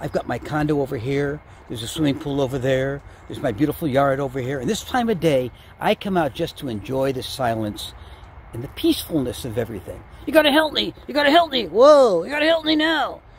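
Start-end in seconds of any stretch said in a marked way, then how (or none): 10.2-13.1 loud, terrified, panicked turkey puppet voice. Ventriloquist meets a turkey puppet that wants him to hide it; terrified turkey puppet voice. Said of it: "Comic Ventriloquist Joe Gandelman meets a terrified turkey what wants him to hide him".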